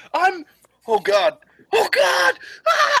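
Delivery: very high, very slow, drawn-out panicked scream. Voicing a character falling off a ship's hull: screaming in panic. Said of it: "You just hear screaming and rushing wind".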